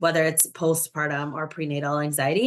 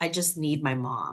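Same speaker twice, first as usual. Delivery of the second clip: slow, tearful, crying, pleading voice; 4 dB quieter than usual. Recalling begging the nurses after delivering during COVID, retelling tearful pleading. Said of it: "crying to the nurses saying".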